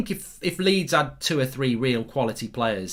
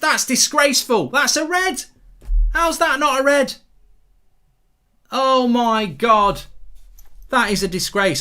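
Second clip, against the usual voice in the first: very high, loud, fake sarcastic indignation; 10 semitones higher, 7 dB louder than usual. Reacting to a foul replay, pretending to be outraged: sarcastic mock outrage. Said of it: "I am actually being sarcastic".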